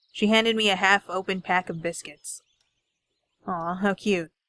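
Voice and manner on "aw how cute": sneering tone, slower. Handed a pack of biscuits, the narrator sneers at her: sneering. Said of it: "I sneered".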